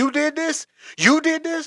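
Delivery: very high, shrill, loud, furious shouting. Retelling a crash, accusing people standing outside their wrecked cars: retelling own yelling. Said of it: "I'm yelling at everybody".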